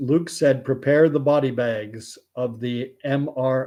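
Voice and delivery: ordinary talk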